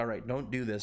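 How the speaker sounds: normal talking voice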